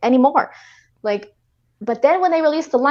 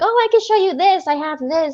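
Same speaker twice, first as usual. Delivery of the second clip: acted cool, offhand, nonchalant, pitched-up casualness; 5 semitones higher than usual. Retelling what someone said on a stream: imitating a nonchalant tone. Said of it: "he just likes to be all nonchalant".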